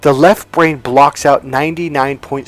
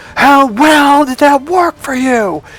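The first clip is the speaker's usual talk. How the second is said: mock very high-pitched screaming, loud and sharp; 12 semitones higher, 3 dB louder than usual. Retelling how he answered Adam: retelling his louder scream. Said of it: "I screamed back even louder".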